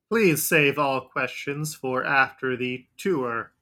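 loud automated robot announcement voice. Voicing an overgrown reception robot greeting visitors: reception robot voice. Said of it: "a reception robot".

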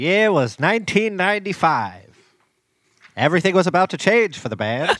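vintage-style narration voice. Narrating the band's history on the show, in a good old timey voice. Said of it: "You got a good old timey voice".

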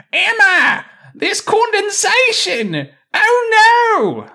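put-on very slow, very high, swooping Australian accent. Quoting people reenacting a show after being asked: put-on australian accent. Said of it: "so that's another Australian thing".

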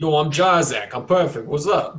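loud, over-the-top, exaggerated put-on Brooklyn accent. After another speaker asks about the accent, doing a Brooklyn accent. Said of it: "Is that a Brooklyn accent?".

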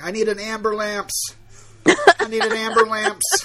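acted, loud, high, stretched-out yell. Describing a video of a man beaten on a subway: retelling a yell. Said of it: "he starts yelling".

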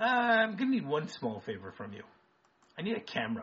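offhand, casual, breezy sing-song nonchalance. Retelling what a man said as the door was about to shut, mock-nonchalant. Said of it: "he says it so nonchalantly".

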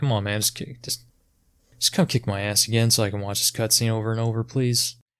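normal talking voice

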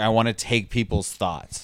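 plain

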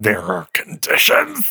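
tense, wound tight, almost a growl. Reading a tense line aloud, almost growling the words. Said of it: "I was so tense I almost growled the words".

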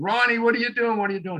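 play-acted, fast, very high yell in Boston accent. Recounting a game where teammates yelled at a teammate, retelling a Boston-accent yell. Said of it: "we're yelling with our Boston accent".

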